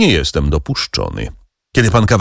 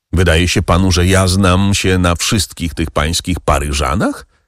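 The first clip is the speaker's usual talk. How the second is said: plain reading voice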